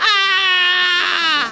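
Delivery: high-pitched scream.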